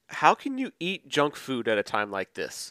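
ordinary delivery

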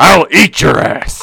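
very slow, rough, unhinged rasping voice. Imitating a man who vows to eat his neighbors: impression of an unhinged man. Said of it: "that's not a bad, uh, impression there".

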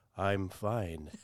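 put-on heavily sedated calm. Reading a mock ad, saying the line with put-on heavily sedated calm. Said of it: "just think you're heavily sedated".

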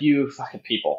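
weary, sighing, fed-up exasperation. Voicing a prisoner fed up with the others: sighing in exasperation. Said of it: "And she sighs, and she's like".

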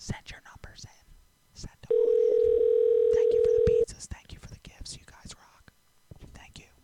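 whispered.

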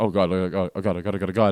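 put-on, imitated panicking voice. Retelling the moment a girl's parents came home: imitating own panicking. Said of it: "I start panicking, like".

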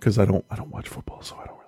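hushed whisper. Talking with someone who then asks why you're whispering, whispering. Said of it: "Why are you whispering?".

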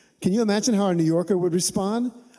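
plain

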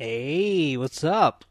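loud voice with the word hey drawn out. Greeting the co-host at the start of the episode: Fonz impersonation. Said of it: "good Fonz impersonation".

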